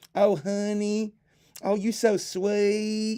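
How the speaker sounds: deliberately bad South Carolina accent, very high, very slow. Showing off a put-on accent, bad on purpose, bad South Carolinian accent. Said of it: "I can do a South Carolinian one".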